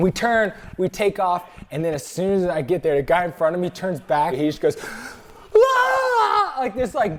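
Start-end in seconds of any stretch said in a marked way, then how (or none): 5.5-6.5 high, loud death scream. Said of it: "death scream".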